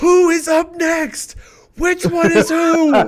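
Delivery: piercing, shrill, high yell at full volume. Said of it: "we're screaming at each other".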